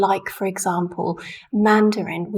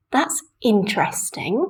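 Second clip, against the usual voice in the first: high rise-fall on "in-" of "interesting". Speaker demonstrates rise-fall intonation on adjectives; high rise-fall on 'interesting'. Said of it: "It's really the voice is going very high".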